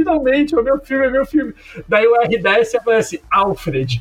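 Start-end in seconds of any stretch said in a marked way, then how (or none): 0.0-1.5 mock-crying put-on voice, higher and faster. Describing a movie scene where Robin sees his letter on screen, imitating Robin crying. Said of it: "o Robin começa a chorar".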